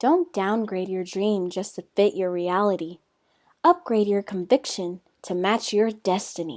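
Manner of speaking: corny, cheesy put-on motivational delivery. Sharing a motivational quote, reading it in a cheesy voice. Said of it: "Let's do it in like a cheesy voice".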